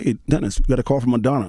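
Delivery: normal talking voice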